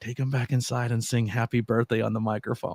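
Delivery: hushed stage whisper, half-whispered. Retelling an instruction said into another speaker's ear: imitating a half-whisper. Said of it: "I whisper in your ear".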